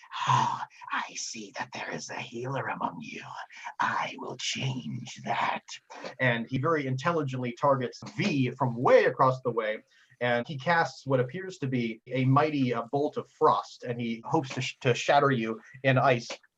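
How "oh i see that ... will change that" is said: menacing hissed whisper, spellcaster voice. A game master voices an enemy arcanist addressing the players: hissing whisper. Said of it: "he kind of hisses and whispers".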